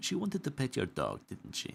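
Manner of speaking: hushed, high whisper. Game master as a bouncer stopping the party, whispering to Frederick. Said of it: "kind of whispers to Frederick".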